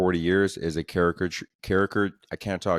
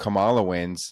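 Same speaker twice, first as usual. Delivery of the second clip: normal talking voice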